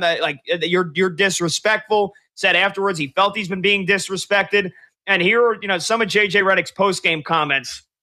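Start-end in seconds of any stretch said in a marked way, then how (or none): none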